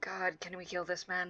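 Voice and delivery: quietly muttered under the breath, mumbling. Speaking in character to companions in Draconic: muttered under breath. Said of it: "go back into Draconic under my breath".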